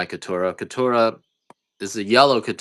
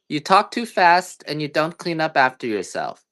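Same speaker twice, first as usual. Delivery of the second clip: put-on high, loud little-girl scolding voice. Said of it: "And she said".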